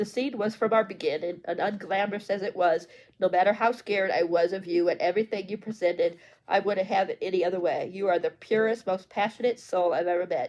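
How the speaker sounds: ordinary delivery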